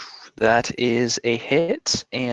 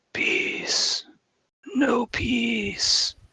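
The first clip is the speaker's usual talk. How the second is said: very high whispered alien creature voice; 13 semitones higher than usual. Recounting a movie scene to fellow players, in an Independence Day alien whisper. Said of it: "The alien whispers".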